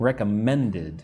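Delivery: recommended with weight on the third syllable men. Teaching English word stress, stress on men in recommended. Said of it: "men is where you put the strength".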